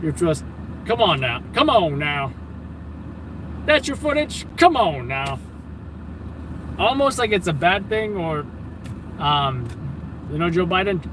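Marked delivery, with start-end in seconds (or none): 0.9-5.4 mock, put-on American accent. Speaker to Adam, showing how Americans would say it, put-on American accent. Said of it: "how Americans would say it".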